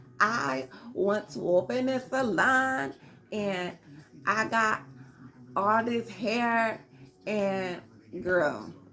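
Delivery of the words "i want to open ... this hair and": stumbling, very slow, halting, word-by-word reading. Imitating how Sierra talks in meetings: imitating Sierra reading off a prompter. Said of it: "this how you be talking in the meetings".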